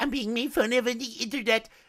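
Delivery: put-on high-pitched little kid voice. Imitating another creator's line, imitating a child's voice. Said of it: "he does the child's voice".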